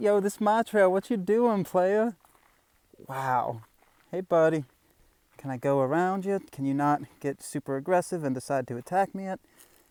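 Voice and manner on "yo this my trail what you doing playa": cocky, street-tough cat voice, pitched up. Voicing a cat that is eyeballing the speaker on the trail: voicing a trail cat. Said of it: "this cat is just eyeballing me. It's just like".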